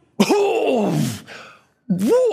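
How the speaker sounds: high, loud, choking gasp.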